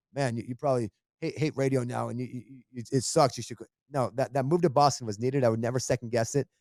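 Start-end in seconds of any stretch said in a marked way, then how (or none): none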